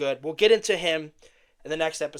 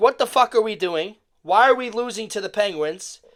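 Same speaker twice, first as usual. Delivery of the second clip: play-acted, screamed outburst; 5 semitones higher, 4 dB louder than usual. Retelling watching the Caps lose on TV: imitating own screaming at the TV. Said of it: "I'm screaming at the T V".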